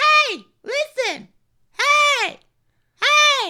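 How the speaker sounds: very high, loud, slow, drawn-out calling voice. Doing an impression of Navi from Legend of Zelda, Navi impression. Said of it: "here's my impression of Navi".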